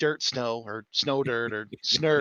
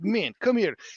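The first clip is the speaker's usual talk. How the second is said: put-on pitched-up Russian accent; 7 semitones higher than usual. Retelling an angry boss from Siberia telling workers to open doors: Russian accent. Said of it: "He had the fucking accent".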